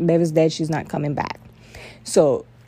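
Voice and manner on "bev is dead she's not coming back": ordinary delivery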